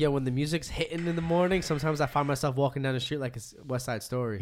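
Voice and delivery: ordinary talk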